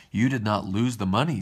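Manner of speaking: plain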